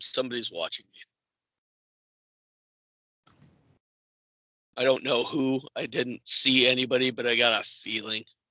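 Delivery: whisper. Going into the dressing room, the speaker whispers to Barian in character. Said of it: "I'm going to whisper to Barian".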